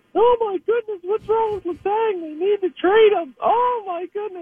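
voice pushed right up into falsetto. Imitating readers who email worried questions: Mister Bill voice. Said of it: "sound like Mister Bill".

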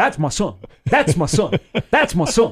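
put-on loud, thick Oklahoma accent laid on heavily. Act out a dad jumping up and down as his son is lifted up, in a really deep Oklahoma accent. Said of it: "In this really, really deep Oklahoma accent".

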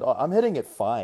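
ordinary talk, nothing marked

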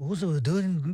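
put-on English accent.

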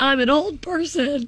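play-acted high, slow, panicked sobbing and bawling. Retelling a friend's phone call after she got scammed: imitating a friend bawling in panic. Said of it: "she calls me bawling, panicking".

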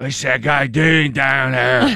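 raspy, smoker's-breath voice with Pittsburgh accent. Quoting a bystander in the video: cigarette breath Yinzer voice. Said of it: "I like the cigarette breath Yinzer voice".

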